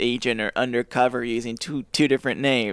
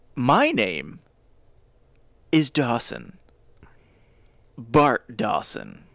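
slow, swooping, suave delivery. Reading the story aloud, the narrator gives a stranger's self-introduction, James Bond impression. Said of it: "I James Bonded it".

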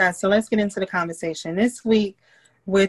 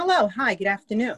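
put-on polite, professional business voice. Recalling how she switched from yelling at the kids to a greeting: imitating a polite business voice. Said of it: "she would put on her business voice".

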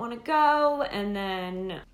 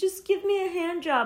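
very high, super whiny, pestering tone; 10 semitones higher than usual. Retelling what he said when refused, imitating a super whiny request. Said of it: "he got like super whiny about it".

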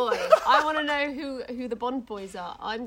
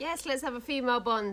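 usual speaking voice

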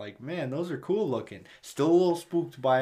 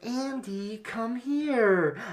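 put-on high childlike voice, drawn out; 9 semitones higher than usual. Retelling a movie scene of a troll chasing a kid: troll imitating a child's voice. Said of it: "it's the child's voice that's like".

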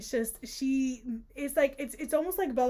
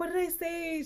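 sheepish, flustered, embarrassed voice, pitched higher; 5 semitones higher than usual. Retelling a couple's scene where she asks what she said, acting out her embarrassment. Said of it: "She's like, embarrassed".

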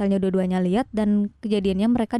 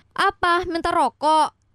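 high, loud challenging tone. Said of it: "Omku tuh ngomongnya kenceng".

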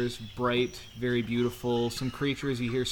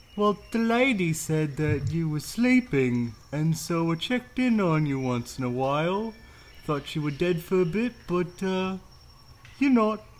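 chatty, pitched-up stone gargoyle voice; 5 semitones higher, 4 dB louder than usual. A gargoyle guardian talks to a traveler who just woke, stone gargoyle voice. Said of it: "and I'm what they call a gargoyle. / and I'm what they call a gargoyle".

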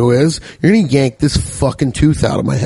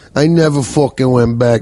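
put-on mobster voice. Ending a dentist story with a Tony Soprano voice. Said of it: "I said it like I'm goddamn Tony fucking Soprano".

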